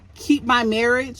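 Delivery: ordinary talk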